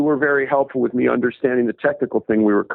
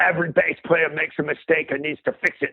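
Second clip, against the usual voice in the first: put-on English accent; 4 semitones higher, 4 dB quieter than usual. Retelling what a man told him about bass players, english accent. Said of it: "He looks at me in his English accent".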